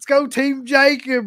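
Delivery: shrill, very high, long drawn-out scream. Retelling a passenger yelling out a car window: imitating Wes screaming. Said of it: "he just screams".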